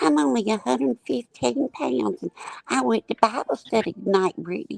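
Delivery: tiny, sugary, very high, creaky sweet little voice. Mocking someone who sits up there acting innocent: imitating Nana's little sweet voice. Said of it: "with that little sweet voice".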